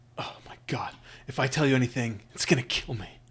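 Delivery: terrified, full-on panicked pleading voice. Voicing a merchant pressed for answers: panicked voice. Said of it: "full on panic at this point".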